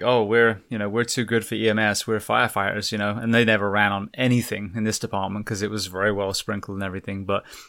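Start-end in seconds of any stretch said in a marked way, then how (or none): none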